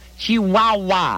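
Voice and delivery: chihuahua stretched out very slow and exaggerated.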